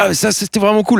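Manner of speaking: high, excited, delighted voice.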